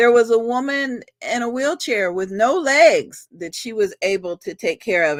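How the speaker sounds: tearful, close to crying. Describing a woman and her group helping the homeless, tearing up. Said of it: "I know i'm i'm tearing up".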